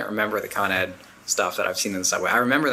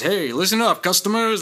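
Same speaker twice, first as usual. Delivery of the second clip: put-on radio-show announcer patter, pitched up; 10 semitones higher, 3 dB louder than usual. Mocking people who imitate a style, speaker acts out a would-be radio host: radio-show host voice. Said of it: "I'm going to do a radio show. So I'm going to talk like this".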